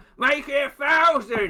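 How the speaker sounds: very high-pitched, loud calling out. Voicing a crowd member who calls out a bet: calling out loudly. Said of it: "You hear Vole call out".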